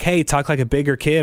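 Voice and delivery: ordinary talk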